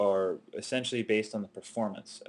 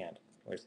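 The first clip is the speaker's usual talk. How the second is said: ordinary delivery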